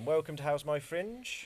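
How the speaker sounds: news reporter voice. A host opens the episode: news reporter voice. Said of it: "I thought I'd do it like a news reporter this week".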